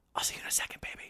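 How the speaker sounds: very quiet, hushed, breathy whisper. Voicing a character who sets down a tube and whispers: whispering. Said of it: "he whispers".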